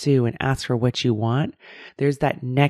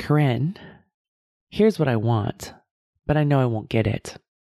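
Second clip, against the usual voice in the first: ordinary talk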